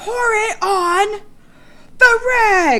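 high, loud, slow, unhinged yell.

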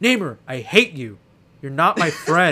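put-on slow, full-throated bellowed yell at top volume. Retelling what his friend said at the top of his lungs, retelling a yell. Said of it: "He just said at the top of his lungs".

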